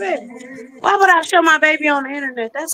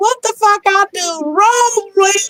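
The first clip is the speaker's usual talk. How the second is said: put-on slow, high elderly woman's voice; 6 semitones higher than usual. Teasing another speaker by quoting an Instagram video: imitating an old lady. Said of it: "You sound like the old lady that was on Instagram".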